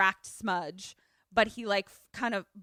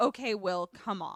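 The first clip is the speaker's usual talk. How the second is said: normal talking voice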